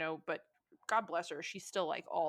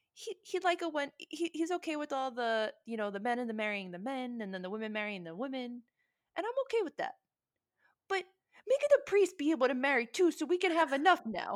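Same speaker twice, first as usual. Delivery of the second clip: put-on Italian accent, much higher and slower; 8 semitones higher, 4 dB louder than usual. Retelling a family talk, the speaker quotes the grandmother in her italian accent. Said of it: "in her Italian accent".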